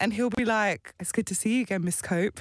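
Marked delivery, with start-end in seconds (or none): 1.0-2.4 put-on sexy, sultry voice. Retelling what the partner says during role play: imitating a sexier voice. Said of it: "his voice gets a bit more sexy".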